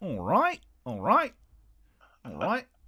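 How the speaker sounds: put-on Australian accent with sing-song swoops. After another speaker quotes Australian slang, doing an Australian accent impression. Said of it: "that's my uh, uh, Australian impression".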